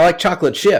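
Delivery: happy, pleased tone. Recounting how people answer when asked their favorite cookie: imitating a higher-pitched answer. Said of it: "it's higher in pitch".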